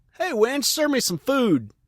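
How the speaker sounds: bossy, shrill holler, pitched way up. Retelling calling out from the couch for food: retelling own yell. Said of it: "I'll yell".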